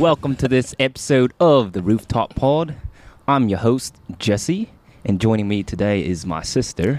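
bad put-on Australian accent. Jesse opens an imagined podcast, introducing siblings, in a bad Australian accent. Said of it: "I don't know what accent this is".

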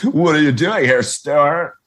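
put-on California character voice. Recalling a Saturday Night Live California skit: Fred Armisen SNL California skit voice. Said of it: "where he's like".

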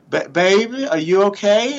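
very slow, well-bred genteel Southern voice. Retelling his mom leaning over him on the sidelines; imitating mom's soft southern voice. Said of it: "she had that real soft, genteel Southern voice".

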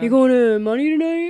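obnoxious, jerky attitude.

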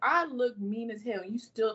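plain

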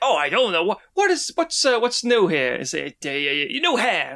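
bad put-on cartoon seagull voice. Retelling a movie scene, quoting the seagull in a terrible Scuttle impression. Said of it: "It's a terrible impression".

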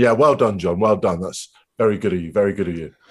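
slightly condescending, patronising tone. Speaker retelling how one man congratulated another too early: mock-condescending tone. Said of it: "In that kind of slightly kind of condescending tone".

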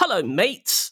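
put-on high, posh-boy, chummy, matey voice. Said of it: "It's a bit like me".

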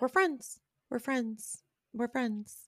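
put-on whisper. Act out what she said, in that whispery Kylie Jenner voice. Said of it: "she does that like whisper Kylie yeah. Jenner voice".

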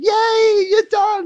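mock thrilled, very high and bright voice. Retelling a wife's greeting at the end of a workday: imitating an excited tone. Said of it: "excited tone in your voice".

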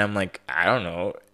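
ordinary delivery

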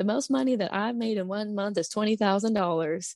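put-on slight Southern accent. Speaker quotes an upline who would stand up and speak; imitating a slight Southern accent. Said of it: "she had like a little Southern accent".

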